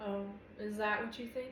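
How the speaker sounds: ordinary delivery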